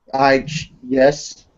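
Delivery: put-on hesitant voice. Copying another speaker's answer to tease them: mocking an unsure answer. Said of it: "that does not sound like you are truly ready".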